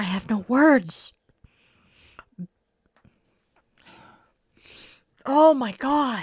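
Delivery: crying, tearful voice full of anger. Speaking about attacks on loved ones, crying from anger. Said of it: "I am crying because I am angry".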